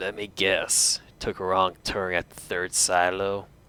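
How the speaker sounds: raspy, rasping whisper. Narrator voices a stranger with a gun at the listener's spine, raspy whisper. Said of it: "a raspy voice whispers in your ear".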